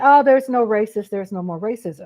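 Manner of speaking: ordinary talk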